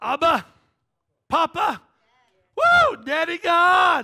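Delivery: very loud, high-pitched, swooping ecstatic shouting. Teaching on a scripture verse, the speaker cries out the answer with excited shouting. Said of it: "Every time I get excited and say it".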